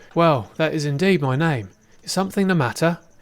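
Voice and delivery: restrained, reserved friendly tone. Narrating, the thief leader confirms his name to a girl, restrained friendliness. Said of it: "responded the thief leader with a smile. / including [name] and his father. / responded the thief leader with a smile. / "Your accent. Are you from Oestra?" / yet controlling the friendliness of his t".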